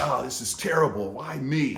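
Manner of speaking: angry, fuming, steamed-up tone, stewing in a temper. Retelling a man stewing before the elevator door opens: imitating an angry man. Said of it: "so like angry and steamed up".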